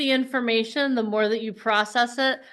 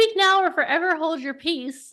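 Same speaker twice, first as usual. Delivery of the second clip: pitched-up voice of an Italian mother; 7 semitones higher than usual. Asking a group for questions, imitating an italian mom. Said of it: "I'm gonna sound like my Italian mom now".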